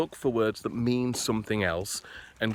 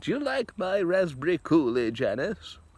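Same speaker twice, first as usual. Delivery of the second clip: put-on slow, high elderly lady voice; 7 semitones higher than usual. Picturing old ladies arriving at jam night with preserves: put-on old lady voice.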